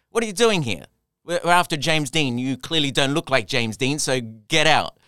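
mock shouting. Retelling an audition where the casting director shouts at the speaker: imitating a shout. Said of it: "he shouts at me".

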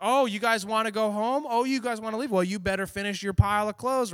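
teasing, high, loud voice. Retelling how a boss mocked late-working staff: imitating a mocking boss. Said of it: "she starts making fun of everybody".

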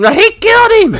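frantic commentator scream, high and loud. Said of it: "it's like".

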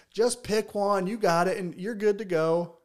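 loud, high-pitched hollering yell. Retelling how the man yelled at him from under the tree: retelling a yell. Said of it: "He's like yelling at me".

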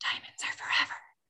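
hushed whisper. Recalling a perfume example, quoting Chrissy Teigen whispering the line. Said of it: "Chrissy Teigen just whispers".

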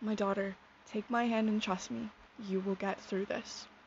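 ordinary talk

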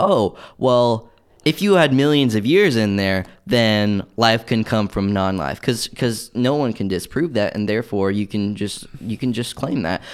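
normal talking voice

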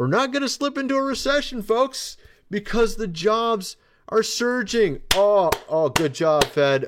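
completely sarcastic, high, laughing.

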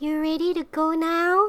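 strange, high, drawn-out put-on woman's voice. Retelling what a strange woman said to them, imitating the weird woman. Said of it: "In this voice?".

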